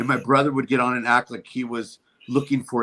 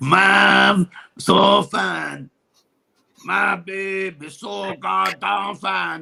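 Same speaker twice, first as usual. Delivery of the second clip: put-on stoner comic voice, pitched higher; 7 semitones higher than usual. Answering a request for an impression: Cheech impression. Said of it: "Cheech impersonation".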